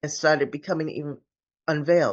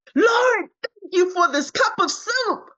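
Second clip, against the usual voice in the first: high-pitched, shrill scream bursting from the gut; 5 dB louder than usual. Retelling what came out of her while he prayed for his mother: a retold belly scream. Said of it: "out of my belly, I screamed".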